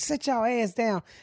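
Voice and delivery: put-on hushed, motherly mama voice. Retelling what they tell creditors, the speaker slips into a mama voice. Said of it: "that'd be the mama that come out of me".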